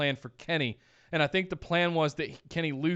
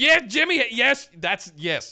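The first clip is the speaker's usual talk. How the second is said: loud, high, excited voice. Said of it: "and I was going".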